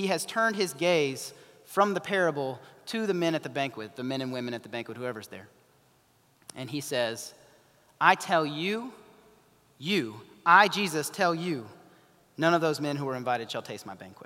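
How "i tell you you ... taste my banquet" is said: acted angry voice. Retelling a parable, acting out his words to the banquet guests, mock-angry. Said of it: "And he's angry".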